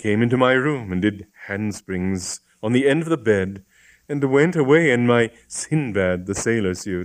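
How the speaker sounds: plain reading voice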